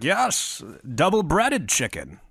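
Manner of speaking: slow, swooping, drawn-out, indulgent and doting. Imagining Colonel Sanders spoiling Buchanan: imitating Colonel Sanders. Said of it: "Colonel Sanders trying to, like, spoil him".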